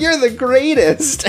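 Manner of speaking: mock hype-man cheering voice. Imitating a hype man cheering on a duelist: imitating Rally cheering. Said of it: "we have Rally here to be like".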